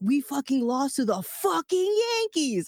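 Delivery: high, toned-down, mild yell. Recounting a tall fan who leaned over at a game, retelling a fan's scream. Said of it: "just screams like".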